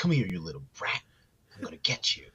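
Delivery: furious, acted-out angry scolding. Retelling what an angry woman told a little kid: imitating someone really pissed. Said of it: "she got really pissed".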